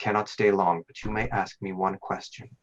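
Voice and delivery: whispering otherworldly voice. Voicing a patron who speaks to a dreamer: patron whispering. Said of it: "The voice of your patron whispers to you".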